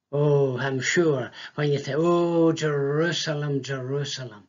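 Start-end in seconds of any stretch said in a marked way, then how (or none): 1.9-4.3 sorrowful, grieving cry full of feeling. The speaker shows how he has said this line with great feeling: mournful lament. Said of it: "I have said it with great feeling and emotion, very mournful".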